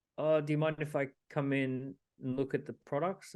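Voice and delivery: play-acted meek, sheepish, timid, apologetic voice. Retelling asking a guard to enter a shop: imitating a sheepish request. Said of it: "you sheepishly say".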